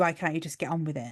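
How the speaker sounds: ordinary talk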